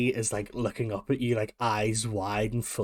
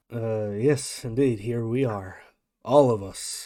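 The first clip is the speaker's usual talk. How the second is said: flat lackluster delivery, louder; 5 dB louder than usual. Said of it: "lackluster performance that your dad tends to have".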